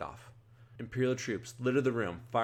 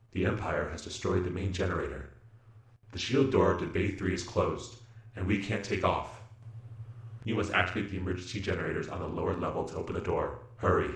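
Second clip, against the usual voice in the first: flat, mechanical robot-like voice; 3 semitones lower than usual. Reading a story aloud, voicing the robot co-pilot over the communicator, Levo robot voice. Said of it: "how was that robot voice?".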